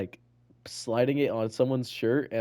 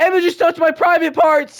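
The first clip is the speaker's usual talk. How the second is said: very high, shrill, very loud schoolgirl shout; 14 dB louder than usual. Retelling what a girl in kindergarten yelled: imitating a girl yelling. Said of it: "she yells".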